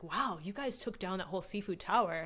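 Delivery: ordinary delivery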